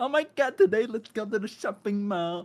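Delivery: scornful, mocking put-on voice of a showy player. Mocking a player who wears Lululemon and perfume: imitating Lululemon Legalia. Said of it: "influenced by Lululemon Legalia".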